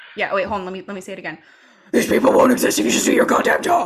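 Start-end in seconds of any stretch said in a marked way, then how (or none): 1.9-3.9 loud, raised, heavily laid-on dark vigilante put-on voice. Redoing a line during a conversation, Batman voice. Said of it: "I had to do the Batman voice".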